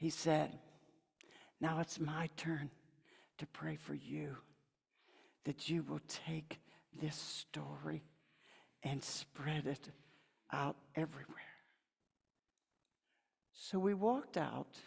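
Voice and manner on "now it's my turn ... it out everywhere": faint, tiny, hushed little whisper. Retelling words said after praying together: imitating a tiny whisper. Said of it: "in this tiny whisper".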